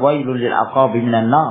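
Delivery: ordinary talk, nothing marked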